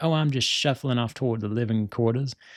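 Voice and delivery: put-on Louisiana Cajun accent. Retelling a scene where Hank asks Bobby what he's doing: Bobby in a Cajun accent. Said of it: "Cajun accent".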